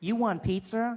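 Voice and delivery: high, phone voice-assistant style voice. Retelling asking the phone assistant to call someone: imitating Siri. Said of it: "She's like".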